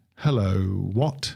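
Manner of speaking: phony put-on British accent. Retelling how a guy at work always greets him: fake British accent. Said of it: "In a British accent".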